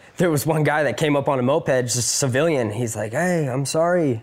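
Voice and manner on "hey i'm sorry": put-on broken English, higher. Retelling what a civilian on a moped said: imitating broken english. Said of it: "kind of broken English".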